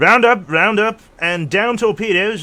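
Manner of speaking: very high, very loud, shrill, booming carnival barker. Reading out a line, the speaker does a roll-up carnival guy voice. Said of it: "I did that as a, the roll up, roll up carnival guy".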